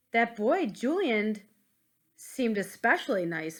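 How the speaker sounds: ordinary delivery, nothing marked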